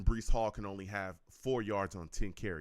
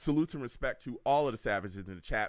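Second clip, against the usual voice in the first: usual speaking voice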